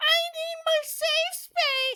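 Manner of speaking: very high, very slow, drawn-out mock-offended voice. Mimicking someone offended over gender, in a mocking put-on voice. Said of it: "I just did that fucking voice".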